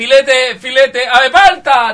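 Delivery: mock bellow, loud, high and slow.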